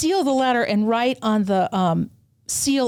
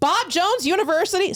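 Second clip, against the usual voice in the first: blurted out loudly, pitched high; 9 semitones higher than usual. Retelling what the insurance clerk said on reading a card: imitating someone saying it loudly. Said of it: "Sorry, that was really loud".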